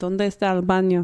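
convincing Spanish pronunciation. Speaker who says he knows no Spanish tries a phrase, good Spanish accent. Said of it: "That was a great accent".

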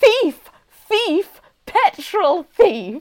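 acted, ballistic, accusing, high, drawn-out screams. Retelling a woman at the petrol station shouting at Mum: imitating someone shouting.

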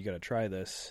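ordinary delivery

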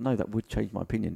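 ordinary delivery

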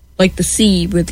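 ordinary talk

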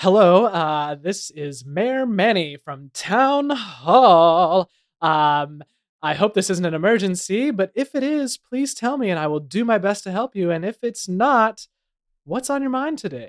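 high, loud, thrilled, excited voice.

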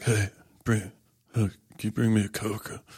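husky, sexy voice. Showing what a sexy husky voice sounds like: Scarlett Johansson husky voice. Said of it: "like the Scarlett Johansson".

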